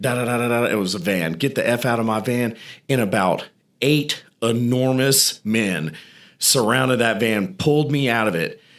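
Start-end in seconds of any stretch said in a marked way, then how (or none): 1.3-2.6 angry, heated voice. Retelling a guard who suddenly turns on the speaker, imitating someone cussing. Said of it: "and he's cussing him".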